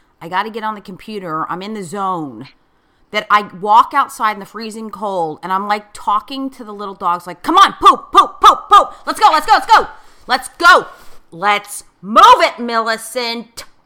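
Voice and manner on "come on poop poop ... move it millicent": over-the-top, very loud, shrill, impatient shouting. Describing taking the dogs out at three in the morning, retelling impatient yelling at the dog. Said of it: "ridiculously over the top in terms of being completely impatient".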